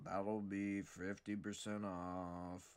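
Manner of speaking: very slow, stone-faced, drawn-out deadpan clerk voice. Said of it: "I bet I got what this guy's voice sounds like".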